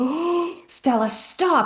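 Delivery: high, frantic, panicked freaking-out cry. Retelling a cat bringing in a bird: imitating own panic. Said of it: "And I'm, like, freaking out".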